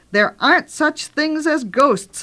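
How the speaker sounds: sudden shrieking outburst, pitched high. A character cuts into another's fanciful talk, shrieked. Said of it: "shrieked Janice".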